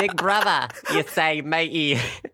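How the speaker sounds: attempted Australian accent. Asked to answer in an Australian accent, a speaker replies: Australian accent. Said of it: "Should we answer this in an Australian accent?".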